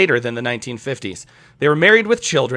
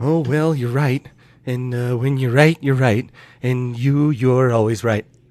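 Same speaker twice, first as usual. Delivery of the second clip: mock elderly politician voice. Doing an impression for the others: Ronald Reagan voice. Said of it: "Ronald Reagan, ladies and gentlemen".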